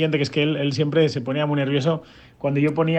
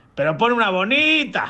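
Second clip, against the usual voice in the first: acted-out high, drawn-out shout from afar; 7 semitones higher than usual. Retelling how Curro called to the DJ booth from the bar, retelling a shout from afar. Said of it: "me lo gritaba desde un poco alejado de la barra".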